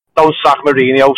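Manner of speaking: ordinary talk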